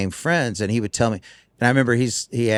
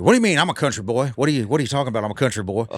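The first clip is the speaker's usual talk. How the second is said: annoyed, offended, indignant outburst. Retelling a story, quoting someone who got ticked off: imitating someone getting ticked off. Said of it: "And [name] got ticked off".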